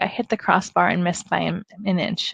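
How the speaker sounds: plain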